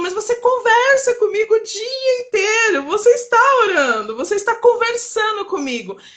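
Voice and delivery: high, tearful voice.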